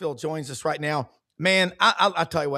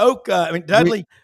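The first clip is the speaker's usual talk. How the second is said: ordinary delivery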